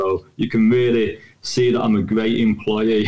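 flat, slow, low, droning monotone. Showing how people who bore interviewers talk: flat, slow, low voice. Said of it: "I lower my voice, I talk at one level, and I slow it right down ... They just talk like this".

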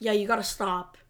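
plain

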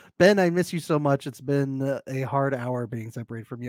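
plain

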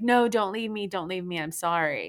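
frantic, desperate screaming with crying. Retelling how she screamed at him not to leave: imitating someone screaming and pleading. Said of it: "then she started screaming, like".

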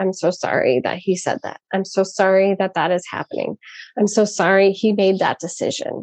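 plain

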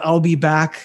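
ordinary talk, nothing marked

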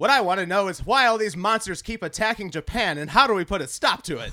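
loud, high, English-dubbed monster-movie voice. Fan quoting his favorite line from the Gamera series, Gamera English dub impression. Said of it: "that's my impression of the English dubbing".

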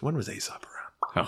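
whispered aside, high and unvoiced.

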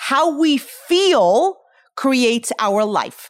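slow, drawn-out stress on "feel".

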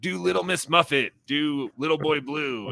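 mock crowd voices shouting out. Retelling how crowds shouted requests for bits: imitating a crowd shouting out. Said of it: "shout out for bits".

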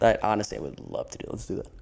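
sarcastic, sing-song, laid on heavily. Answering another speaker's suggestion to discuss inflation: sarcastic tone. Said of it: "your sarcasm".

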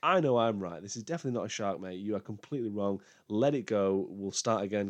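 ordinary delivery

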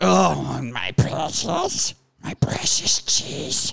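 breathy, whispered creature voice. Asked if he is possessed over cheese, a person answers in a Gollum voice. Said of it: "So now we got Golem working".

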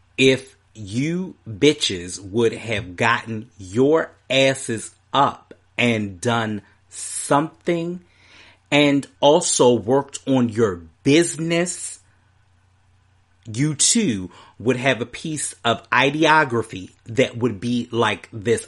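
very slow, clear, plain, spelled-out delivery. Speaker backing TT, talking straight to detractors, very slow and plain. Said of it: "I'm going to say it very clearly, very plainly, and very slow".

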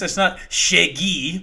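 imitated French pronunciation. Correcting another speaker's way of saying a name: imitating a French pronunciation. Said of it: "it's not French".

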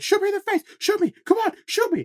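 very high yelling, repeated over and over. Describing a game NPC's quest, imitating an NPC yelling at the player. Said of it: "just like yelling this at you like repeatedly".

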